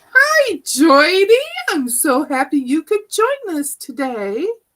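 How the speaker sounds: high, loud sing-song voice.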